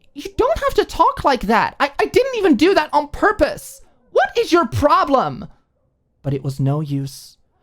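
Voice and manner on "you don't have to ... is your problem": angry, heated outburst, pitched way up and swooping. Reading a story, a character protesting an outburst: angry. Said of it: "Her eyebrows scrunched together in anger".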